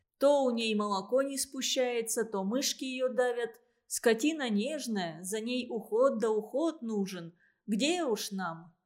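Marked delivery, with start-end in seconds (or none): none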